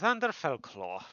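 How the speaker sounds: put-on loose, slight Irish-sounding accent. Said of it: "I use an Irish-ish, Irish-ish accent for, uh, Xander".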